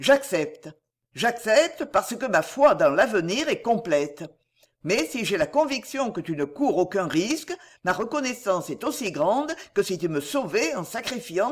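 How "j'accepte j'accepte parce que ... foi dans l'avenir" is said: usual speaking voice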